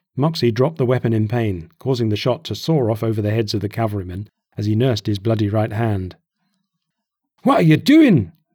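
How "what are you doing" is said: loud, high, roaring bellow. Burback shouts at Moxie after Moxie drops his weapon, bellowing. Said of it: "Burback bellowed".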